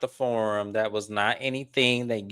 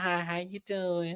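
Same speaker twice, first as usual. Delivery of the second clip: soft, little, high-pitched tone of voice; 9 semitones higher, 8 dB quieter than usual. Retelling how Stormy greeted everyone, imitating Stormy's high-pitched tone. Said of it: "Stormy in that little high pitched tone".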